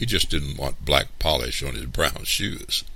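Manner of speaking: ordinary talk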